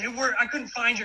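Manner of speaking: high-pitched, loud yelling voice. Retelling scolding the kids for being late: imitating own yelling. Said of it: "I'm yelling at the kids".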